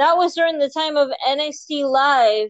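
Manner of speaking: mock high, dim-witted fan voice with dawning realization.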